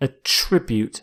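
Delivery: "attribute" said with second syllable stressed. Lecturer presenting a vocabulary word as a verb: stress on the second syllable of attribute. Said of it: "you stress the second syllable".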